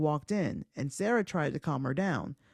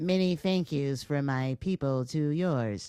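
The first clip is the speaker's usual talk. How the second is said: put-on alien voice with strange otherworldly accent; 2 semitones lower than usual. Performing the alien character bit they are getting better at, alien voice. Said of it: "what'd you think about my alien voice?".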